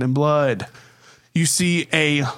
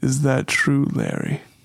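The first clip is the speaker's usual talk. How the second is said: unruffled, collected, cool, calm voice. Role-play player voicing a figure questioning Larry: cool voice. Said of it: "you hear the cool voice go".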